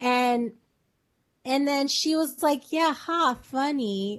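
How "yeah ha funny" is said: sarcastic, not meaning it, throwaway tone. Retelling a woman's reaction to a crude joke, imitating her sarcastic reply. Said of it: "like sarcastically".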